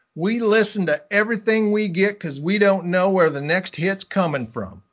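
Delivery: put-on Southern US accent. Retelling what the receptionist said about listening to every recording: southern accent. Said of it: "a receptionist with a Southern accent".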